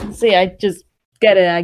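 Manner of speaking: normal talking voice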